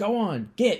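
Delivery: very high, shrill, loud shout. Retelling a film scene where the barkeep throws him out: imitating a shouting barkeep. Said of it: "the barkeep shouts at him to get out of here".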